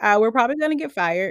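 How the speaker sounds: plain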